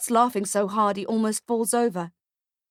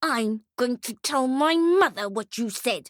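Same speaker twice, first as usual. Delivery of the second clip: spoken through gritted, clenched teeth; 2 semitones higher than usual. Reading a story, the girl answers Ferdy through clenched teeth. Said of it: "talks through her clenched teeth".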